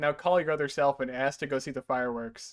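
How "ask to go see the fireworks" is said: ordinary talk, nothing marked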